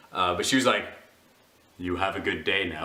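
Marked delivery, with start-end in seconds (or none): 1.8-2.9 mock solemn, dead-earnest, low voice. Retelling a clerk's parting words: imitating a very serious tone. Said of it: "she was so serious about it".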